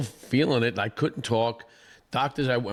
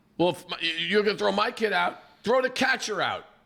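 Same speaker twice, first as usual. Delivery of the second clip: mocking, rising, high-pitched yell; 8 semitones higher than usual. Retelling how a hit batter's father reacted at a kids' game, retelling a yell. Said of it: "hit's dad is yelling".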